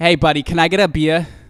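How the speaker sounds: put-on loud, thick New Jersey accent. Improvising on camera, ordering a beer from the bartender, super Jersey accent. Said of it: "Like like super Jersey".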